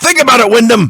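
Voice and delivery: shrill, very high-pitched shout. Retelling a wrestling promo where he looks at the camera: imitating Sting shouting. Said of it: "and he just shouts".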